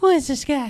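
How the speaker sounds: put-on very high, loud small child's voice. Retelling what the speaker said as a young child meeting the king, in a high voice. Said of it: "And in my high voice".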